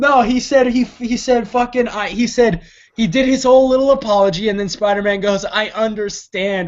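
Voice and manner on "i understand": sob-choked, weepy, tearful crying voice. Retelling a movie scene where Spider-Man answers an apology: imitating Spider-Man crying. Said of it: "while crying".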